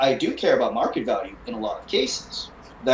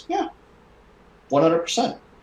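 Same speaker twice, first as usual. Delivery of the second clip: put-on earnest, dead-serious, raised lively pitch; 5 semitones higher than usual. Retelling his own past reply to the man questioning him, in a serious deadpan tone. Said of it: "That tone of voice".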